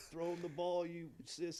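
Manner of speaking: mock heckling yell, high and carrying. Retelling yelling at the team during intentional walks: retelling own yell. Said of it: "yelling at the team".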